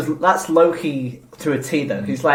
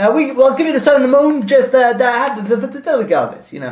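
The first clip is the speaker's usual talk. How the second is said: put-on gangster accent, pitched higher; 9 semitones higher, 5 dB louder than usual. Describing the Sicilian American accent they do, showing a Joe Pesci-style accent. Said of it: "We do a Sicilian American".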